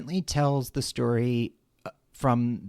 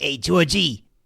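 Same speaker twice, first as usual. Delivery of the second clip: put-on Queens accent, tough-guy voice; 2 semitones higher, 5 dB louder than usual. Describing a clown character's voice and quoting his line, in a tough guy Queens accent. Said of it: "he speaks with this like tough guy Queens accent. He's like".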